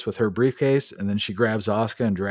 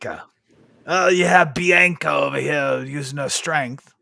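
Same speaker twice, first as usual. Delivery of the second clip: put-on British commentator voice, higher and louder; 6 semitones higher, 5 dB louder than usual. Retelling how a commentator called the match: imitating Wade Barrett. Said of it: "Wade Barrett says".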